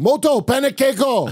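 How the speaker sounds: put-on movie-style yell. Talking about pancakes, the speaker yells like in Inherent Vice. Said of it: "I yell like in Inherent Vice".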